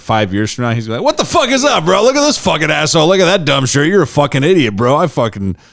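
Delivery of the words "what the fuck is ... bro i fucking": very high, mocking, taunting insult comic voice. Imagining a friend years later as a bully comic: imitating Brian as a bully comic. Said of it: "He turned into the bully comic".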